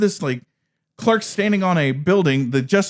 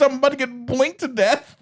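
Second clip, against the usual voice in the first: mock high, shrieking, screamed-out voice; 6 semitones higher than usual. Retelling a movie scene where a character is caught in an eyelid: imitating a scream. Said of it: "and she screams".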